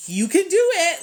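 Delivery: very high, loud, sassy sarcastic tone. Recounting a woman's reply to a text asking for guidance, mock sassy, sarcastic. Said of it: "like a sassy, sarcastic".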